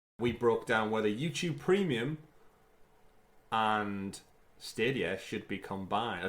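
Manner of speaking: slow, deliberate, unhurriedly spaced words. Recapping last week's discussion for listeners: speaking slowly. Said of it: "I suddenly started speaking slow then".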